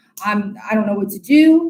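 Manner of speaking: ordinary talk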